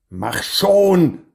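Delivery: urgent, high, loud, impatient shout. Narrator reads a character telling a girl to hurry up, shouting. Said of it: "schrie Floff".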